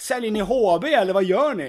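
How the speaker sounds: acted, playful, high, joking yell. Telling how he joked with boys shouting at him in a schoolyard, retelling a joking shout. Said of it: "så skojar jag och så skrek jag".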